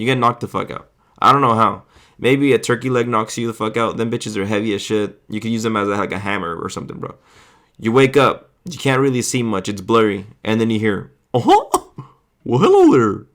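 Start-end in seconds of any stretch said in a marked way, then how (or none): 11.3-13.1 high-pitched, loud, with words stretched out. Describing waking up blurry after being knocked out, then hearing a Mickey Mouse voice. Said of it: "that was my best Mickey, Mickey voice".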